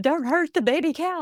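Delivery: high-pitched screaming. Retelling how mom screamed out the window at the cattle: imitating mom screaming. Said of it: "she's screaming out the window".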